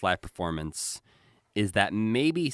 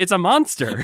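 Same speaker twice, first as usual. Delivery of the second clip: shrill, very high, very loud shout; 11 semitones higher, 9 dB louder than usual. Retelling a Muppet scene from the show: imitating a yell. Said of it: "He yells".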